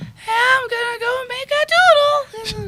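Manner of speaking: squeaky, very high, tipsy cartoon dog voice. Showing how the character answers whenever you talk to him, in a tipsy Doodle Poodle voice. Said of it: "he's like".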